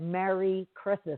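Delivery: ordinary talk, nothing marked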